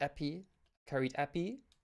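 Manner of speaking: "epi" said with put-on French accent. Joking after saying a word French-style: put-on French accent. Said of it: "Been learning French, can you tell?".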